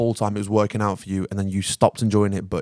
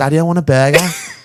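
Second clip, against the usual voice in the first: put-on small child voice, louder; 6 semitones higher, 10 dB louder than usual. Picturing a mini-me child of his own running around, imitating his imagined kid. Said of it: "mini me running around and goes".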